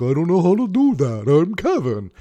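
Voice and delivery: put-on vampire monster voice. Retelling Kevin's reply to a request about the MP3s, imitating Kevin, Dracula-sounding. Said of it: "why do I sound like Dracula?".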